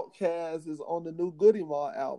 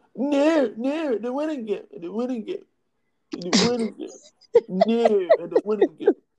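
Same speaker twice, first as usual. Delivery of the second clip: put-on high-pitched, loud little-kid voice; 6 semitones higher, 5 dB louder than usual. Doing a politician as a younger little kid: Trump as a little kid. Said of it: "that's my Trump".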